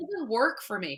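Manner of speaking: soft, put-on spoiled rich-person voice. Explaining why people resell clothes, in a put-on wealthy person's voice. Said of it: "I'm using that voice".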